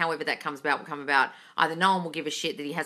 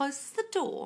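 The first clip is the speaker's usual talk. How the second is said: soft, hushed, breathy British accent; 10 semitones higher, 6 dB quieter than usual. Repeating your own earlier words after a comment on how you said them, british accent. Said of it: "says closed door in a British accent".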